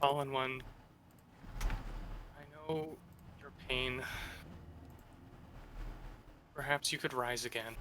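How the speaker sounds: very quiet hushed whisper, barely voiced. Player's character kneeling before a shrine, speaking to himself, whispering to himself. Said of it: "he just whispers to himself".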